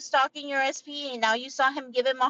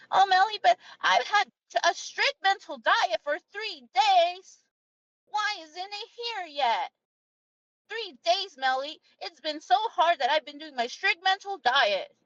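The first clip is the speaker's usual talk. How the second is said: put-on high, drawn-out, whiny, complaining little-baby voice; 5 semitones higher than usual. Imitating someone who complains after three days of mental diet: imitating a whiny complainer. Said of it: "your whiny, complaining little baby shit".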